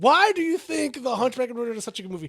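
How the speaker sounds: play-acted, high, hollering, yelling voice. Imitating Joey objecting to their movie pick: imitating Joey yelling. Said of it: "I can already hear Joey yelling at me".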